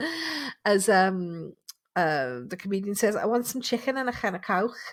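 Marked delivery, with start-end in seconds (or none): 3.2-4.8 comic put-on Scouse Liverpool accent. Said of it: "That's the only way I can get a Liverpool accent".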